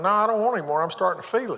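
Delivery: play-acted smug, self-satisfied tone. Retelling how the wife answers the speaker's question: imitating a smug reply. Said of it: "look at me kinda smugly and say".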